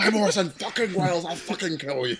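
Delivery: mock furious, threatening tone. Imagining the director threatening people on set: imitating an angry Orson Welles. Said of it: "I can imagine Orson Welles".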